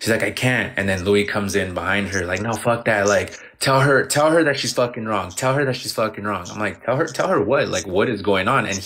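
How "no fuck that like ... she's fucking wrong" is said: normal talking voice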